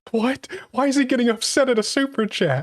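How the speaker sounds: high-pitched, puzzled, clueless confusion. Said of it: "Somebody who can't read sarcasm will totally be like".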